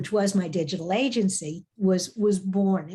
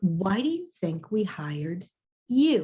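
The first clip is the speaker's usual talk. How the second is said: put-on dry, unbothered, dead straight delivery. Retelling the boss's answer after running down the hall to him: retelling a deadpan reply. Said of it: "completely deadpan".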